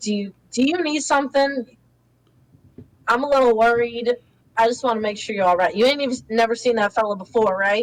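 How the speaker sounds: speaking as a man. Describing a scene, the speaker voices the man checking on the woman, voicing the man in the scene. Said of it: "he's gonna be like".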